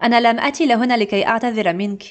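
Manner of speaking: rapid native-speed Arabic.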